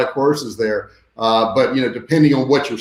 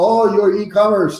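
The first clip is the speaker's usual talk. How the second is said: put-on Indian English accent, pitched up; 9 semitones higher than usual. Retelling what a man he hired in India told him, mock Indian accent. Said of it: "I'm making fun of our Indian accent".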